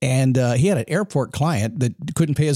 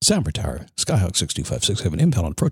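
put-on pilot radio voice, pitched much lower; 7 semitones lower than usual. A nervous new pilot retelling a radio call to the tower, pilot radio voice. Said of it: "put my pilot voice on".

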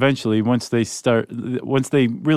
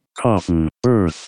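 machine-like text-to-speech delivery, robotic computer voice; 4 semitones lower than usual. Speaking as the computer to avoid saying a phrase himself; robotic computer voice. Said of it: "That was a good computer impression".

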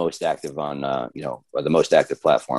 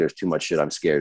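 ordinary talk, nothing marked

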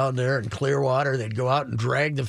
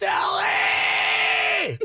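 imitated scream, pitched higher. Retelling how Kirby Puckett screamed at a friend in the bullpen: imitating Kirby Puckett screaming. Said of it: "he's screaming at him".

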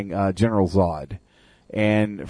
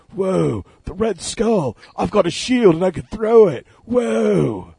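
very high put-on voice, every "whoa" long and stretched; 10 semitones higher than usual. Imagining Keanu Reeves as Captain America: Keanu Reeves impression. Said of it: "It could have been Keanu Reeves' Captain America".

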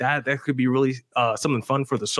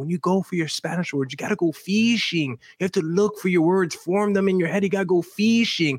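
put-on heavy Argentine accent, laid on thick; 4 semitones higher than usual. Retelling a high school Spanish teacher's advice: imitating teacher's thick Argentine accent. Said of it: "She had, like, a very thick, like, Argentine accent. She'd be like".

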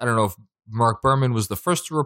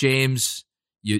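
usual speaking voice

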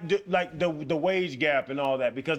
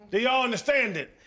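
high-pitched yelling; 8 semitones higher, 3 dB louder than usual. Asking the group again about the wage gap: yelling. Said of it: "why are you yelling?".

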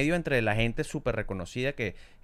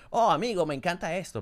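put-on American accent in Spanish, pitched high; 7 semitones higher than usual. Retelling a bit done with a friend: mock american gringo voice. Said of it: "hacemos como voces como si fuéramos gringos".

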